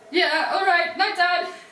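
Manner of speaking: awkward, high, loud, forced cheerful delivery.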